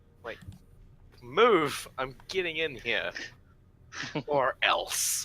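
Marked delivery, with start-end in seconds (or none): 1.3-5.3 huffy annoyed character voice, higher and louder. Voicing a character who gets up after being pushed down: huffy angry character. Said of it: "She huffs and get, gets up".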